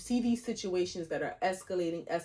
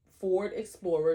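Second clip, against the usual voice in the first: normal talking voice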